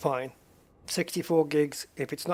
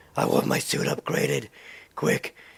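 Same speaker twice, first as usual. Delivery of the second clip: rough, rasping, creaky superhero voice. Retelling a Batman impersonation done while upgrading a suit: Batman impersonation. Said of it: "trying to do my Batman impersonation".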